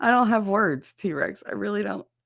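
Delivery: high, tearful, on the verge of crying. Thanking a donor for a gift, holding back tears. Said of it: "Don't make me cry again".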